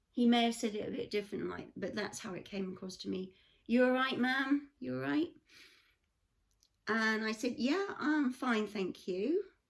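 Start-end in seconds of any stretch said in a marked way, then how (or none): 3.7-5.3 imitated American accent. Retelling what a driver said to the speaker, in his american accent. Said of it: "in his American accent".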